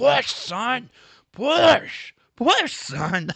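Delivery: very loud, very high, slow, shrill yelling. Retelling a washroom story, imitating a dad yelling at his son. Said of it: "yelling at his boy in the stall".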